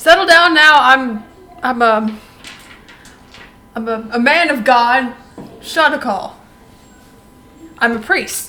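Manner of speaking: put-on loud, slow middle-aged man voice. Player voicing a priest character addressing guards, forty-five-year-old man voice. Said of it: "I'm still trying to do this voice here".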